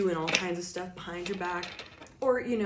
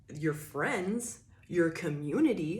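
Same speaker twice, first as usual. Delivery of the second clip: dripping sarcasm, words set off in scare quotes. Naming the cards' friends and community while reading tarot: sarcastic. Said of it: "I'm putting that with sarcasm and in quotes".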